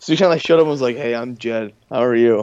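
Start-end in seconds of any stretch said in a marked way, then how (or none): 1.0-2.4 deadpan, awkward monotone with no inflection. Retelling how Jed showed up to the family: imitating Jed's flat voice. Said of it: "everything he says is so flat".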